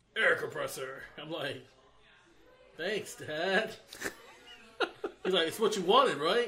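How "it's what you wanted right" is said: loud, quick thuggish tough-guy voice. Retelling his dad's reply about a birthday air compressor, in a thug voice. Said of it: "Why did he say it so, like, thug?".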